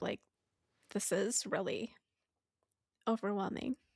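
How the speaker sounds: teary voice, tearing up. Telling another speaker about the talk of trauma, tearing up. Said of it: "I'm tearing up".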